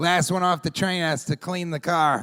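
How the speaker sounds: put-on Boston accent with announcer-style delivery. Retelling the train conductor's announcement on arriving in Boston: Boston accent. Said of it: "the conductor in a Boston accent was like".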